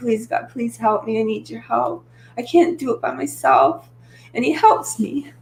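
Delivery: tearful crying, voice swooping, cracking and breaking. Telling how they pray to God each morning, the speaker starts crying. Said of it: "Sorry, I start crying".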